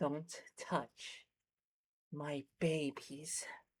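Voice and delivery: slow, hushed, breathy whisper in a mother creature voice. Voicing the larvae's mother in a game: voicing the larva mother. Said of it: "we'll do the mother".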